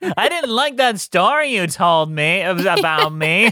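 slow, drawn-out drawl through the nose. Answering a story with a nasal Pauly Shore impression. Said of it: "I had to throw a little nasal in there".

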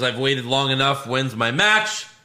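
normal talking voice

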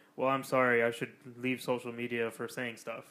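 ordinary talk

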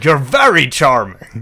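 loud mirrored, put-on posh accent.

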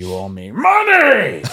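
slow, loud, swooping, drawn-out yell. Doing a George C. Scott impression when asked: George C. Scott impression yelling. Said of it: "That's pretty good".

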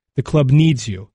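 normal talking voice

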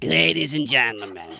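put-on Ukrainian-accented voice. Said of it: "I think I can do a Z-, a Zelensky now".

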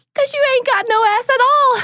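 very high, loud, sugary Southern woman voice. Retelling a sweet Southern woman's remark: imitating a sweet Southern woman. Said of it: "She goes".

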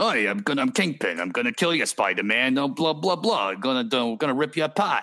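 hammy, thick, overacted Brooklyn villain voice. Imitating the Kingpin's overacted threats from the movie: Brooklyn accent as Kingpin. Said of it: "he's kinda doing this, like, Brooklyn".

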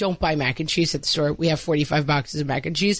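ordinary delivery

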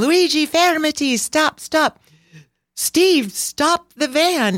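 very high-pitched, frantic screaming. Recalling film and marble dust flying everywhere, the speaker retells their own screaming. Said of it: "So I'm screaming".

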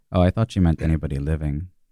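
said quietly. A player speaks in character as a companion heads toward the elf, quiet. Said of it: "I'm just like quietly going".

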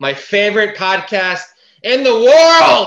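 too loud, high-pitched, gushing voice.

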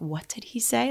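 embarrassed, mortified, caught-off-guard voice. Retelling a mother's reaction in the audience: imitating a mortified mother. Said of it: "she's, like, mortified".

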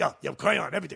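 exaggerated fake Chinese accent. Retelling a comedy bit about waiters who agree: imitating a chinese waiter. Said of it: "the Chinese voice".

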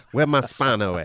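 put-on laid-back celebrity voice. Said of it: "the idea of [name]".

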